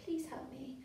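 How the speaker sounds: very quiet, gentle tone. Teaching character voices, showing a little girl's plea: soft gentle voice. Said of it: "this soft gentle voice".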